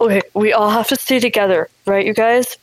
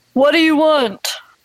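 called out, pitched up; 6 semitones higher than usual. Playing a character calling out to a cloaked stranger at a gate: shouting. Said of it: "I'm shouting".

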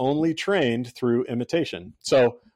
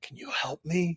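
put-on whisper, higher and quieter; 4 semitones higher, 9 dB quieter than usual. Retelling how a two-year-old asked mom for help at prayer: imitating a whisper. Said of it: "whispering to mom".

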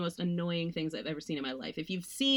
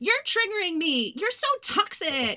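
put-on, very high, shrill, loud hostile yelling; 13 semitones higher, 6 dB louder than usual. Retelling how movie characters react when something happens: imitating characters yelling. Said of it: "they all start yelling".

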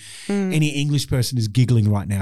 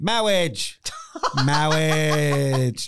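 put-on comic English priest voice, pitched higher; 5 semitones higher than usual. Joking about what he expected the priest to shout, novelty English priest voice. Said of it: "some sort of novelty English priest voice".

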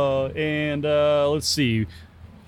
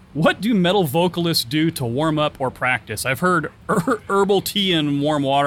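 ordinary delivery

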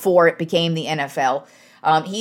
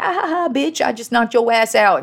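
mock jeering through laughter, pitched up; 5 semitones higher than usual. Acting out a football player after he knocked out an opponent, imitating him laughing. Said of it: "he was basically kind of like laughing".

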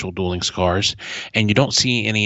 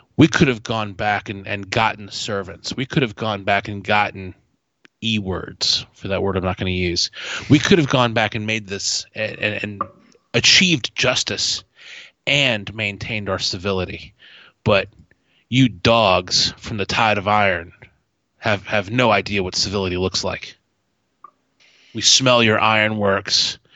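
ordinary delivery

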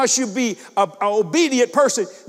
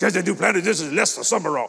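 put-on old preacher way of talking, lower pitch; 5 semitones lower than usual. Retelling a phone call from Lester Sumrall, imitating Lester Sumrall's voice. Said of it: "That's how he talked".

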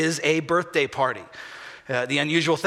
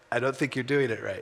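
put-on muttered voice, lower and quieter; 5 semitones lower, 5 dB quieter than usual. Retelling how a wife commented on a tire change: imitating Suzanne muttering under her breath. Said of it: "She says it again".

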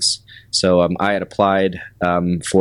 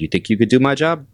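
put-on heavy Brooklyn accent, laid on thick, pitched up; 6 semitones higher than usual. Retelling what a man asked after pulling you aside, in a thick Brooklyn accent almost like De Niro. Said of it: "very thick Brooklyn accent".

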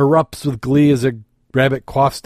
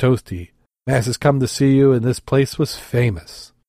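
ordinary delivery

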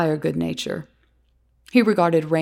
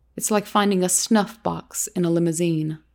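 plain reading voice

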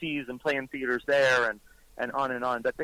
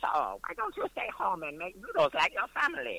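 put-on high, elderly character voice; 8 semitones higher, 4 dB quieter than usual. Doing an impression of James Hong after saying he talks like this: James Hong impression. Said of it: "he talks like this".

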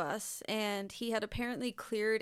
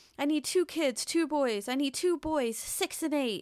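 imitated yell, higher and louder; 6 semitones higher, 6 dB louder than usual. Retelling an armed man's demands to a bus driver, imitating someone yelling. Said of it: "he's just, like, yelling".

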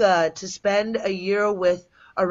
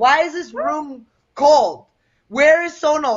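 loud, high, mock angry dad outburst; 7 semitones higher, 7 dB louder than usual. Retelling the dad finding the room cold, imitating an angry dad. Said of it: "my dad would get so mad".

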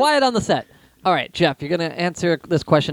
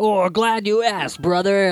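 puppet-like wrestling promo voice; 3 semitones higher than usual. Answering a question as Hulk Hogan: Muppet-like Hulk Hogan impression. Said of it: "You sound like you sh-".

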